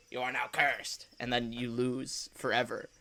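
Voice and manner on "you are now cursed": very nice and very evil character voice. Showing what a wrestler sounds like: Danhausen voice. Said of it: "opens his eyes wide like that, and he's like".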